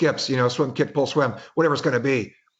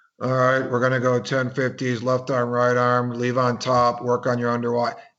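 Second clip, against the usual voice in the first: mock flat, droning monotone delivery; 2 semitones lower than usual. A coach acts out another coach giving instructions to kids: flat monotone. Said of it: "going back to that monotone".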